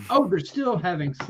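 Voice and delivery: ordinary delivery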